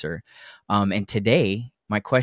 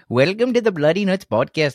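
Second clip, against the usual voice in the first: loud bad Canadian accent sliding into Indian accent; 10 semitones higher, 5 dB louder than usual. Opening the podcast while trying a Canadian accent; bad Canadian accent attempt. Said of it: "That was like Indian and Canadian".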